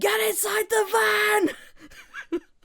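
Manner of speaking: put-on shrill, very high yell, drawn out. Describing a dubbed anime clip, imitating a character's yell. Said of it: "he's yelling".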